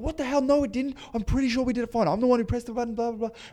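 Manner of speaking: acted, very high, rushed, freaked-out panicked scream. Retelling the DOP's reaction to a joke about lost footage: imitating the DOP screaming. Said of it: "she starts screaming like".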